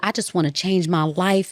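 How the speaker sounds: put-on pleading voice. Retelling how a person from jail begged for help: imitating someone pleading. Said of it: "begged, they pleaded".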